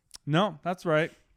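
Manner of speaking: mock deadpan, flat delivery. Retelling a guy's answer to them, retelling a deadpan reply. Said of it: "The dude was just like straight face".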